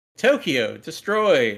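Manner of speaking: put-on robotic computer narrator voice. Retelling an anime's english narration: imitating a computer narrator voice. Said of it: "it's a computer voice being like".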